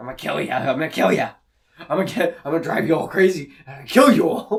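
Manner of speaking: very loud, raspy, grumbling voice. Imitating how the possessed bodies in the movie talk: grumbling raspy voice. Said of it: "raspy and say-, saying things like".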